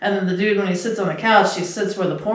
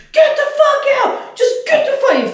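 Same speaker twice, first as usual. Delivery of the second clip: mock wild rage, very high, shrill, swooping furious shout; 5 dB louder than usual. Describing a man kicking out a prostitute, imitating him flipping out. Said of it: "he just flips out".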